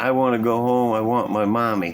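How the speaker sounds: ordinary delivery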